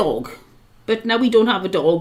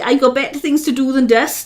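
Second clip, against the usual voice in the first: ordinary talk, nothing marked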